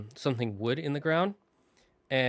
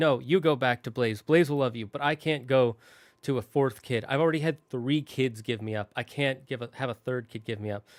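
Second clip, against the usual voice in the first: ordinary delivery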